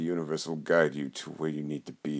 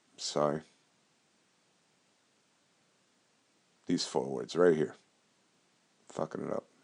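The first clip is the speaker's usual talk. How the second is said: a little emotional, feeling rising, welling up. Introducing a hawaiian prayer meditation to listeners, the speaker is getting emotional. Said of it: "Getting a little emotional right now".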